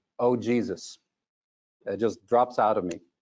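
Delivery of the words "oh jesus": muttering. Retelling a reaction when the projector broke down: muttering. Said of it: "I mutter".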